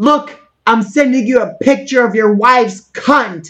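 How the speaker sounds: light, mild yell. Retelling a reality show clip where Sharon Osbourne throws a ham: imitating Sharon Osbourne screaming. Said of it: "she screams".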